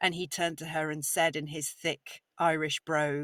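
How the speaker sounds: usual speaking voice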